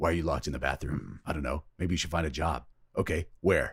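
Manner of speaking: flat, dry character voice. Describing a game scene where JC Denton talks to his mirror, flat dry JC Denton voice. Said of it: "very dry delivery, very flat".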